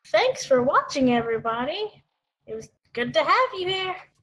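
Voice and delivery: cartoon character voice. A co-host gives their outro thanking viewers, Rizzo voice. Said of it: "You sounded like a Walt Disney character".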